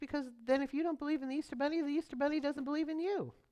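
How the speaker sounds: high, fast sweet motherly voice. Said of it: "she looked at me very sweetly".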